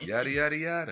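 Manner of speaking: high mock Italian accent.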